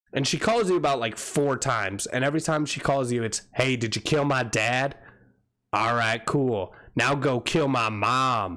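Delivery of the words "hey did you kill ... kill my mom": heavy Southern drawl, slow and deep. Quoting a woman who keeps calling you with requests: deep southern accent. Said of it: "I have a deep Southern accent".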